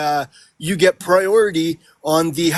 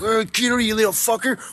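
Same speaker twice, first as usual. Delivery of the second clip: acted, sudden, high-pitched, angry cursing outburst; 5 semitones higher, 3 dB quieter than usual. Explaining a pillow swing was just goofing around, acting out a mock-angry outburst. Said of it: "it's not like I got fucking angry".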